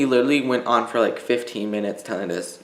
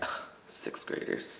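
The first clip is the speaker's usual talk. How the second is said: sarcastic mutter whispered under the breath. Retelling what he said under his breath in class, imitating a sarcastic mutter. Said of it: "Like in like a sarcastic".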